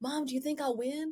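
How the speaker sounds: imitated whisper. Retelling asking mom at a speech competition if she'll win: imitating a past whisper. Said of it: "and I whispered".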